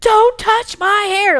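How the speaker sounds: put-on, very loud, very high, drawn-out yell. Retelling what she says when someone touches her hair: imitating a loud shout. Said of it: "like, really loud".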